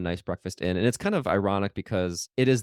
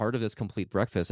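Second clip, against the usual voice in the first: ordinary delivery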